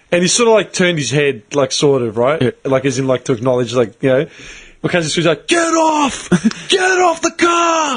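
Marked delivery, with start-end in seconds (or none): 5.4-7.9 put-on screeching, very high and very slow. Telling a race story, the speaker acts out their cousin screaming at a driver: retelling a scream. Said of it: "Like screaming at him".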